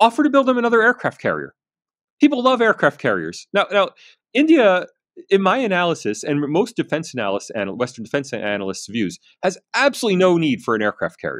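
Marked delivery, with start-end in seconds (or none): 0.0-3.5 play-acted, very high, swooping, playful, rattled off. The speaker recalls a suggestion made in jest, retelling a joking remark. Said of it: "And I jokingly said".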